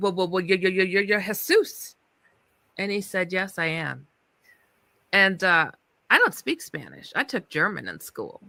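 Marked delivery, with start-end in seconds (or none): 0.0-2.0 mock stuttering delivered at a faster pace. Retelling realizing who was in front of them, acting out own stuttering. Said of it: "and I'm stuttering".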